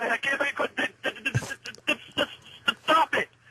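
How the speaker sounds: very high, halting, broken stutter. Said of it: "Are you playing?".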